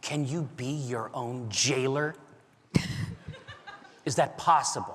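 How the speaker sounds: muttering under breath. In an Acquisitions Incorporated role-play scene, a character asks a question, muttering under breath. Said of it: "just under my breath".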